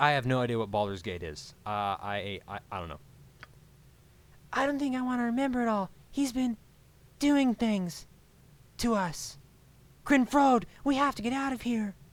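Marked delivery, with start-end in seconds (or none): 4.5-11.9 high-pitched voice. Reading unvoiced game dialogue aloud: voice like the marshmallow people. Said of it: "That sound like those marshmallow people".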